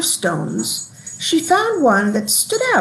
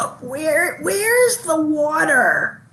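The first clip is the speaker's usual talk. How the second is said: small, high, raspy creature voice; 5 semitones higher than usual. Reading a story aloud, the newly hatched creature asks for water: small raspy voice. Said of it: "said in a small, raspy voice".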